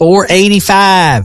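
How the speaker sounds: high, slow Southern twang. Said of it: "when she's trying to talk to Siri".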